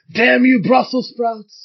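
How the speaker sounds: high, loud, slow mock angry outburst.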